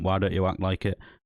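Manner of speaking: plain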